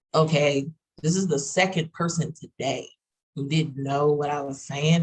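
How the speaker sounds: normal talking voice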